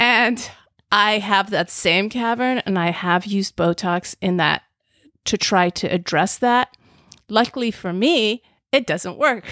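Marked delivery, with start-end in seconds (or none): 7.3-9.5 dry, sarcastic aside. Talking about using Botox on a deep frown line: sarcastic. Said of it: "i was being sarcastic".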